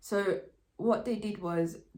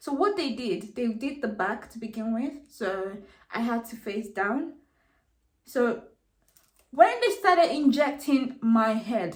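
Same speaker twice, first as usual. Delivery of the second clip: raised, loud voice steadily climbing, getting carried away; 3 semitones higher, 6 dB louder than usual. Speaker recounts a procedure they disliked; raised voice. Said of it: "sorry, I'm raising my voice".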